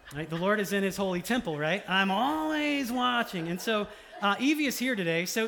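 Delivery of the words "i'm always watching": high-pitched, creaky voice. Imitating the crotchety boss lady character Roz, as the daughter does: Roz impression. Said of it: "likes to impersonate Roz".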